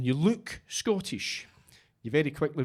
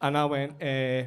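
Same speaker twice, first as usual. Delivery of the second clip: ordinary talk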